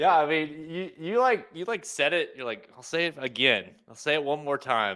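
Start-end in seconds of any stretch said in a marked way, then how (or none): none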